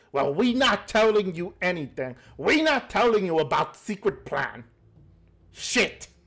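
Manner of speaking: creature voice of a goblin. Voicing a goblin trying not to get angry at the other two: goblin voice. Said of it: "the goblin who you guys were originally talking to".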